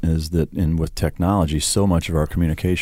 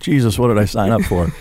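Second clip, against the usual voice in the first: plain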